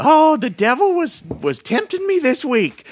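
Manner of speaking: put-on very high, shrill elderly woman voice. Retelling a comedy skit with two old ladies at church, old church lady voice. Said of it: "dressed up like two old ladies at church".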